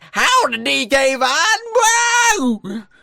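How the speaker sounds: very slow, high, goofy dumb drawl, "whoa" stretched. Teasing another speaker about reading a comment: stupid put-on voice. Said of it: "At least I didn't read it like".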